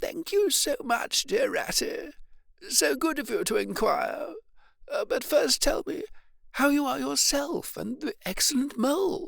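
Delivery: weak, feeble, very high-pitched voice. Narrating Toad's reply from his bed to his visitor, feeble Toad voice. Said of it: "At last a feeble voice replied".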